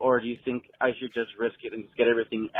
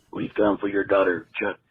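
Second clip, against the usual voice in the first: put-on ghoul character voice, lower pitch; 3 semitones lower than usual. Doing an impersonation for the hosts after saying here goes: Beetlejuice impression. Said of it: "a pretty good impersonation".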